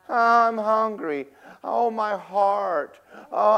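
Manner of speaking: put-on, high, whiny, dragged-out complaining voice. Retelling a TV survivalist starving on day six: imitating someone whining. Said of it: "he's starting to whine".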